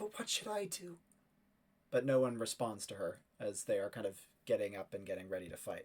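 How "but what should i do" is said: frightened, half-hearted, hushed whisper. Voicing Ethel as the knights get ready to fight: Ethel's scared whisper. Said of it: "Ethel kind of whispering to them".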